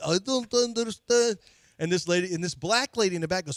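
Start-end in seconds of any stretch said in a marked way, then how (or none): 0.1-1.4 phony, pitched-up, put-on Russian accent. Retelling pretending not to understand visitors at the door: fake Russian accent. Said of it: "I hit a fake accent".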